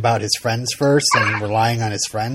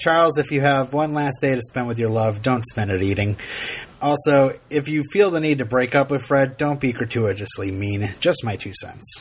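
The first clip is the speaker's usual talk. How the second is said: normal talking voice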